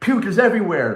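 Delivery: high-pitched, loud, hysterical crying outburst. Retelling a friend's panicked phone call, imitating someone hysterical. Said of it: "you're hysterical saying".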